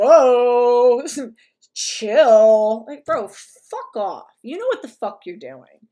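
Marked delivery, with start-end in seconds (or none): 0.0-2.9 mock condescending, dismissive voice, louder. Acting out someone who feigns innocence toward upset women: imitating a mocking dismissive tone. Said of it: "It's just like".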